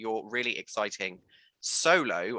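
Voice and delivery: solo stressed hard and said loud. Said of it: "I'm gonna stress that word".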